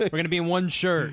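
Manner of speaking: loud, high, excited delivery. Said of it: "I was like".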